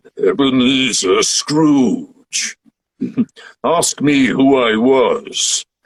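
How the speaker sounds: very slow, echoing, hollow-sounding voice. Showing off a favorite voice they can do, in an echoey voice. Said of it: "it's kind of an echoey voice".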